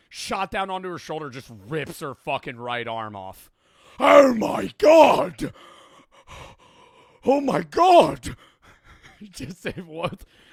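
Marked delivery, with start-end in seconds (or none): 4.0-8.3 put-on old-timey, loud, high, drawn-out panicked outcry. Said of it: "a guy from that era in time trying to react to that".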